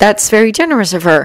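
ordinary delivery

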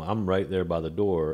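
normal talking voice

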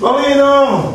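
slow, loud, drawn-out calling voice.

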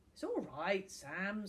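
ordinary delivery

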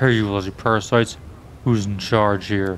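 surprisingly low, deep dragon puppet voice. Narrator reading, a young man voicing his dragon glove puppet; deep puppet voice. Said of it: "begins to ventriloquize in a surprisingly deep voice".

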